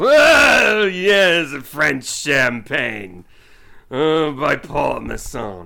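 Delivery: booming, very slow delivery with stretched Oh. Doing a wine commercial line like Orson Welles: Orson Welles voice. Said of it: "Or I could do it like Orson Welles".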